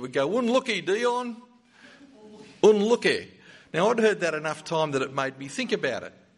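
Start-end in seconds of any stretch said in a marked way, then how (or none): 0.4-3.3 put-on marked English accent, pitched up. Retelling a father's shout to his son after a missed shot, in a distinctive english accent. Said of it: "he had a very distinctive English accent".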